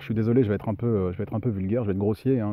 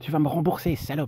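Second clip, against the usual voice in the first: petite, acid, sour, pitched-up little voice; 6 semitones higher than usual. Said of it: "avec sa petite voix acide".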